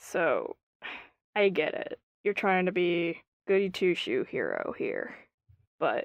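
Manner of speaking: hushed, close, low whisper. A character pulls a companion aside to speak privately, whispering low. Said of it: "She whispers low in your ear in Orcish".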